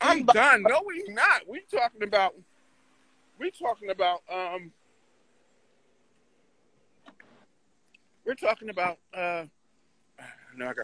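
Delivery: speaking with a mouth full of chewed food. Talking through a meal while another person objects, talking with mouth full. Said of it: "You got a mouthful of damn food".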